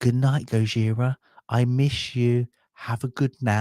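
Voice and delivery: put-on slow, sweet, child-like stage half-whisper. Retelling a child saying goodnight to a hibernating pet: imitating a child half-whispering. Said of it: "and he just whispered".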